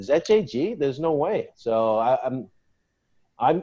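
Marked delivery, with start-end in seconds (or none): none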